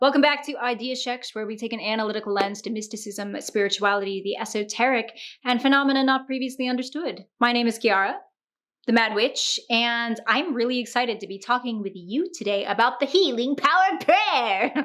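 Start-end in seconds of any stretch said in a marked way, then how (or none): 13.0-14.9 swooping, hammed-up supervillain voice. Introducing the day's topic to viewers: mock Power Ranger supervillain voice. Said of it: "like a Power Ranger supervillain".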